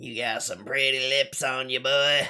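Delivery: raspy, twangy smoker voice. Voicing a baddie flirting over a voice changer: redneck smoker voice. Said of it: "Like a mix of a redneck and a smoker".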